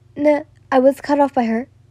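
ordinary delivery

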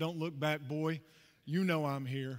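imitated, mock-calm put-on voice. Retelling what a man said to him during a race, imitating a calm voice. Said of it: "he says to me in a calm voice".

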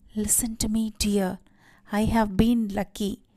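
voice sinking to a whisper. After shouting at the women, a man drops his voice to speak to his wife: whispering. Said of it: "he sank his voice to a whisper".

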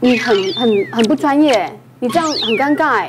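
ordinary talk

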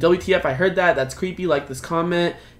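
ordinary talk

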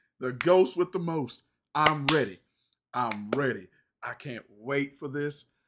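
thrilled, excited, eager, ready-to-go energy. Reacting to an upcoming favorite film, excited. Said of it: "I'm excited".

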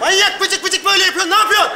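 exasperated outburst.

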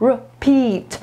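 repeat, second syllable -peat stressed. Giving English pronunciation tips in Polish: stress on peat in repeat. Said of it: "a akcent jest na teat, czyli będzie repeat".

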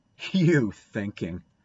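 withering, scornful, contemptuous tone. Davy retorting to Dora, withering scorn. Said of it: "retorted Davy with withering scorn".

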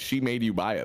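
ordinary delivery

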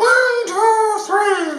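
shrill, very high, loud and nasal voice. Speaker demonstrating how a macho voice is built, adding a bit of nasal. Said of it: "Let's just add a bit of nasal now".

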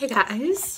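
high voice breaking on the word hello. Greeting the audience at the start, voice cracking. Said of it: "my voice cracked".

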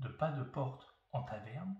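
ordinary delivery, nothing marked

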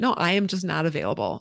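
normal talking voice

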